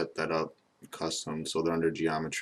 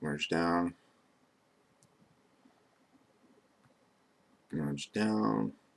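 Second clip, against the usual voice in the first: flat, droning, repetitive monotone. Repeating a step aloud while working, just to keep talking, repetitive monotone. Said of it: "Sorry for my repetitive monotone voice".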